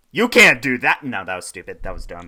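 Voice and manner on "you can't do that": very loud, high-pitched outdoor speaking voice. Urged by another speaker to show the voice he was practicing: loud outside voice. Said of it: "practicing my like loud talking voice, my outside voice".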